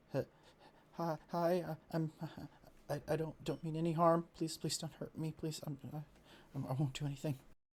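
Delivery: frightened stammering voice. Voicing a gnome who begs not to be hurt: frightened stammering plea. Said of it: "She's like".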